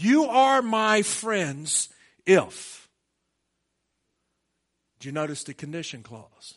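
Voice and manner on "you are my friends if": very slow, deliberate, word-by-word delivery. Speaker reads a verse aloud to listeners a second time, reading very slowly. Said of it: "Let me read it slower".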